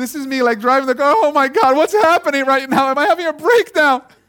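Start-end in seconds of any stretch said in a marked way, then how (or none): 1.2-4.0 high-pitched, sobbing ugly cry through the words. Retelling bursting into tears while driving the car: retelling ugly crying. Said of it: "I'm crying like ugly".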